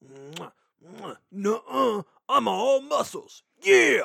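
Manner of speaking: showboating muscleman bravado, drawn out, big and loud. Voicing a muscly pony in the recap: Macho Man Randy Savage voice. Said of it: "He's so Macho Man Randy Savage".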